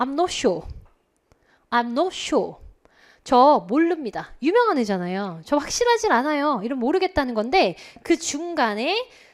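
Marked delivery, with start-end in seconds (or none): 0.0-2.5 plain British English pronunciation. Showing the class how to say the phrase: British accent. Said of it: "영국 발음 해주세요".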